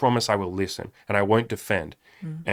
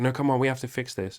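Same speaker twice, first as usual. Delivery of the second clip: put-on insistent, pushing tone, higher; 4 semitones higher than usual. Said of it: "It's like".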